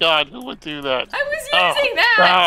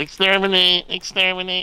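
put-on nasal robot voice; 2 semitones higher than usual. Explaining how the robot talks, nasal Dalek voice. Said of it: "you have to hold your nose while you're saying it".

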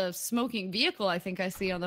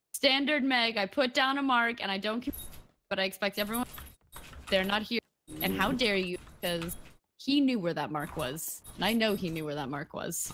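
ordinary talk, nothing marked

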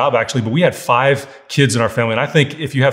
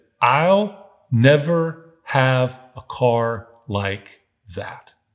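really quiet, hushed, dejected, sad, very slow. Retelling what a thirteen-year-old friend said at a parked car: imitating a quiet, sad voice. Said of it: "his voice got really quiet".

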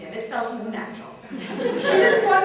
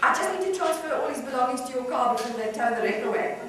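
plain

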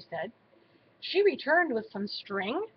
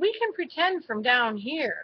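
ordinary delivery, nothing marked

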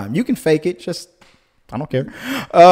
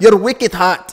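put-on, fake Irish accent attempt; 3 semitones higher than usual. Reading out a commenter's line, imagining him Irish: put-on Irish accent. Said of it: "I put the accent in because I, I only imagine he's Irish".

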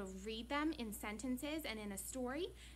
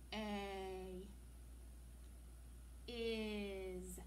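very slow, soft reading, "is" drawn out; 3 semitones lower, 5 dB quieter than usual. Showing listeners how to read tricky words aloud: really slow. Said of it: "and go really slow like that".

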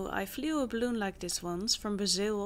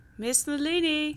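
high, loud calling shout, as if across distance; 6 semitones higher, 4 dB louder than usual. Told to just shout, calling for the daughter they are looking for, shouting. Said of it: "just shout".

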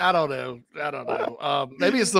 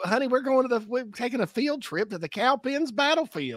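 put-on much higher Spartanburg middle-aged woman accent. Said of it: "that accent's peak Spartanburg middle-aged woman".

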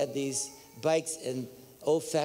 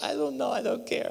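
put-on drunk voice, much higher, faster; 9 semitones higher than usual. Retelling what his wife answered when asked what was said, imitating a drunk wife. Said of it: "Like she's totally drunk".

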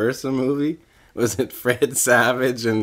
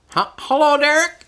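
put-on old woman voice, much higher pitch; 4 dB louder than usual. Playing the car seller in a skit, greeting the buyer who answered her ad: old woman voice. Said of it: "I'll be an old woman".

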